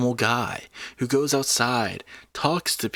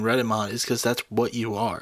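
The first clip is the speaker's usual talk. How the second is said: normal talking voice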